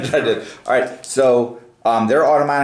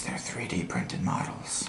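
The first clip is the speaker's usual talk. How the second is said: very quiet, hushed whisper; 5 semitones lower, 16 dB quieter than usual. Talking with a listener, the speaker drops into a whisper: whispered. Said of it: "I have to whisper and say this".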